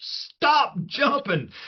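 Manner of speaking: high, slow, coach-style yell.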